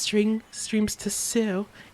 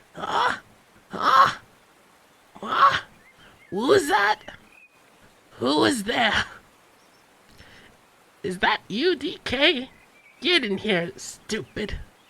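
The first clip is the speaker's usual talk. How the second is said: sleepy, cranky, raspy yell, pitched high; 5 semitones higher, 4 dB louder than usual. A man woken by a knock on the wall yells at the visitor, annoyed and raspy. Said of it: "yelled in his annoyed, raspy voice".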